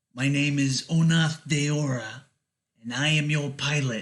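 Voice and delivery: slow-talking spider-eel creature voice. Voicing a needle-toothed creature introducing itself to the players: voicing a spider-eel creature. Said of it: "it introduces itself".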